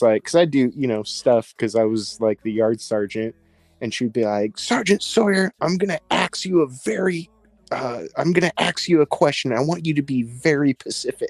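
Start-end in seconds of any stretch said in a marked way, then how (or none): 4.6-11.3 mock irate, high, angry scolding tone. Retelling his deputy warden questioning him as yard sergeant, imitating an angry deputy warden. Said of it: "man, she was angry".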